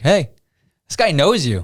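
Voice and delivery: acted, high-pitched, called-out shout. Retelling a buddy calling over during softball warm-up: imitating a friend shouting. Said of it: "my buddy shouts over to me".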